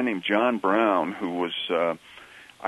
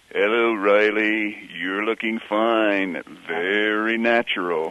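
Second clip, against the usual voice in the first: slow, drawn-out character voice, words stretched; 3 dB louder than usual. Recalling the character's usual first line, the speaker does a Digger O'Dell voice. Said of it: "in his Digger O'Dell voice".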